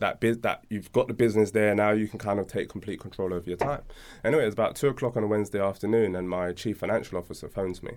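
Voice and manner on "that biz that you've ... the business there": ordinary talk, nothing marked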